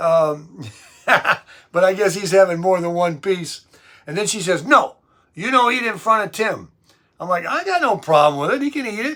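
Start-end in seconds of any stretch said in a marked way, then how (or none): 4.6-6.7 put-on Italian accent. Retelling what a woman said about the speaker's diet, in her Italian accent. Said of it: "she got that Italian accent".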